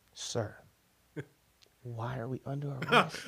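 soft, polite, toned-down put-on voice.

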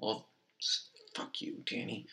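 very soft muttering under the breath. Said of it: "muttered insult under breath".

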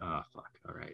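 put-on mutter under breath. Acting out a woman in the kitchen: imitating muttering under breath. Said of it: "under her breath".

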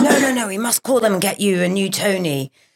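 put-on American accent. Retelling what a manager said about getting a new one: imitating Jeremy in an American accent. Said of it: "he actually said it in an American accent".

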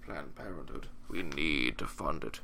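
very deep, slow, dragging demonic voice. Joking about Morgan getting emotional, imitating Morgan's demon voice. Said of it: "It's like your demon voice".

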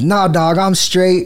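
put-on dismissive, offhand, brushing-off kid's voice. Retelling how a nine-year-old slammed the door and refused: imitating a nine-year-old kid's refusal. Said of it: "slams the door and goes".

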